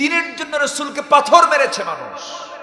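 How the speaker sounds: rising impassioned shout building to full volume.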